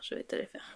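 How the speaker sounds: soft, breathy whisper.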